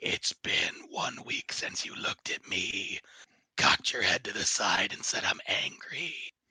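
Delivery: low, growling, breathy half-whispered voice. Acting out a recorded message a woman plays back, in a low growling voice. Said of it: "in a low, growling voice just saying".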